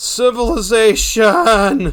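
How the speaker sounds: loud, high voice breaking mid-word. Speaker suddenly noticing a village nearby, exclaiming with a voice crack. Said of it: "voice crack".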